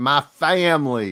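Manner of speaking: put-on Louisiana accent. Retelling a coach's speech at a basketball game: imitating Brian Kelly's fake Louisiana accent. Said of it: "you never had an accent".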